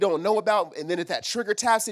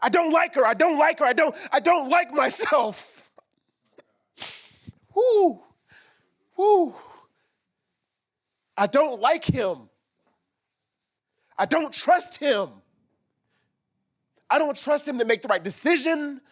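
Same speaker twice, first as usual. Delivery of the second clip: high, distraught, breaking-down emotional voice; 6 semitones higher than usual. Retelling what they said when prompted to keep saying it, reenacting an emotional breakdown. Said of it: "I had this physical emotional breakdown".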